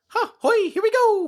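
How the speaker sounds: exaggerated cartoon Italian accent, pitched way up. Discussing the movie's casting, demonstrating a full-on Mario voice. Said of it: "full on Mario voice".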